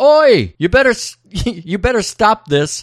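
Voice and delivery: acted-out shout. Retelling a street fight, acting out a man stepping up to stop it: retelling a yell. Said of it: "he yells".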